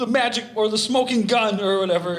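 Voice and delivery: put-on high, loud, taunting kid voice.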